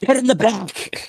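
very high, shrill, piercing shrieked scream. Voicing a pilot shooting from the cockpit, telling another player: screaming. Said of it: "and she screams".

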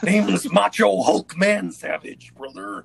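very loud, slow, rough boastful voice. Playing a character, answering another character who asks his name: Macho Hulk Man Savage voice. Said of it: ""Name's [name], / "Name's [name], brother".

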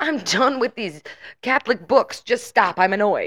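put-on screaming. Recounting a scene where she screams at him, retelling a scream. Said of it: "when she like screamed at him like".

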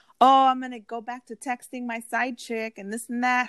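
mild, light half-shouted yell. Retelling what he shouted as the speaker was leaving, retelling a shout. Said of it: "he shouts at me".

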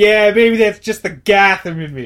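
tough New York attitude. Describing a movie scene, imitating Batman with tough New York attitude. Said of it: "Batman's almost got, like, a New York kinda attitude".

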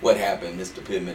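plain

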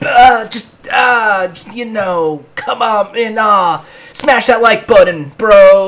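high, loud drawling surfer dude voice. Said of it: "Why do you sound like the surfer dude from that viral clip?".

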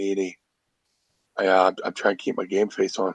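stoic, low, dead flat monotone voice.

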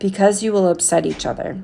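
ordinary delivery, nothing marked

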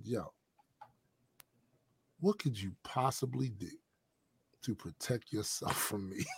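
hushed, deep, dead calm low murmur. Retelling how a man answered a challenge instead of bellowing, retelling a very calm line. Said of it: "He very calmly said".

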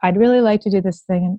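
imitated flat, unexcited monotone voice. Imitating people who are not excited about their idea: imitating a monotone voice. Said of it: "they're a bit more monotone".

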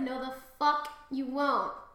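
ordinary talk

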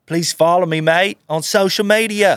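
put-on Australian accent. Asked to do an Australian accent, the speaker performs a sample line in it. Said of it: "Australian accent".

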